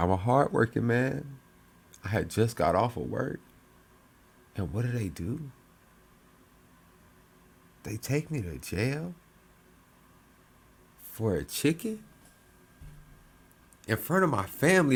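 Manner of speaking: put-on heavy, sad, woeful, sorry-sounding voice. Retelling what an arrested man said about being jailed, imitating a sad voice. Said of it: "it's the sad voice for me, bro. He said".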